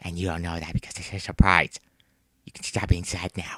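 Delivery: soft, low, hushed whisper. Telling the person a surprise party is being planned for them, whispering.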